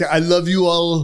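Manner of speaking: put-on Brazilian accent. Describing a group chat member's messages, imitating Sanjay's Brazilian accent. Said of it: "in his Brazilian accent".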